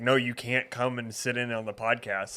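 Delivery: ordinary delivery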